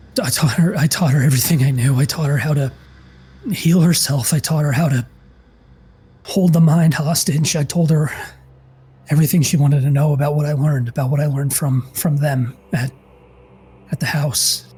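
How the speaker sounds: fearful, pained, hurting voice. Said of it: "the fear in his voice, the pain in his voice".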